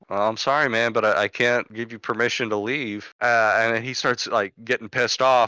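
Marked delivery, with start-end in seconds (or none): none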